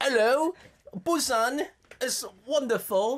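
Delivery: clumsy fake British accent. Admitting they are terrible at accents, a speaker tries a bad British accent. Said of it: "We can't do British accents either".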